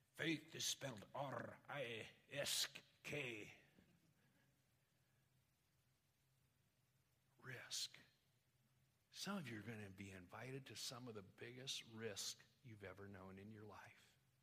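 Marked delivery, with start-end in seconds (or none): 0.2-7.9 slow, deliberate, put-on Scottish brogue. Quoting a friend from Scotland, Joe Ewan, on faith: imitating a Scottish brogue. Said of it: "he did it with this Scottish brogue".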